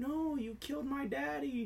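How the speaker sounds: put-on small, soft little-kid voice. Retelling a scene where a voice from the back accuses someone, tiny voice. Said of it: "tiny voice".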